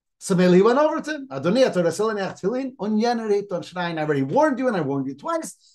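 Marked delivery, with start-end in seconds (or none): none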